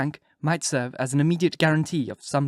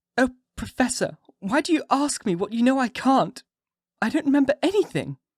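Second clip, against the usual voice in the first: very high, gentle, sweet voice full of concern; 10 semitones higher than usual. Reading a novel, voicing the waking woman answering the professor: sweet, concerned. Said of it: "sweetly, and seemingly with the utmost concern".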